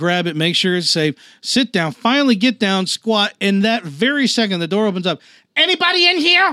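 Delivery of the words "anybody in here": put-on very high, angry, nasty Vietnamese accent. Retelling how a door opened at a fast food restaurant, imitating an angry Vietnamese voice. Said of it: "like sort of like angry Vietnamese voice".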